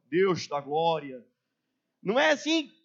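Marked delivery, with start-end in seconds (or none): 0.1-1.2 put-on Carioca accent, much lower. Speaker mocking how people change their voice in prayer: put-on Carioca accent. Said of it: "Muda o tom da voz, ganha um sotaque carioca".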